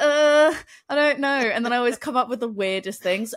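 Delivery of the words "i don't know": put-on flustered, caught-off-guard, panicked, pitched-up voice. Retelling spelling words out loud and panicking: imitating own panicked reply. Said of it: "I panic and I'm like".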